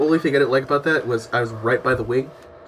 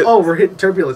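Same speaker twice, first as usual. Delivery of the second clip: ordinary delivery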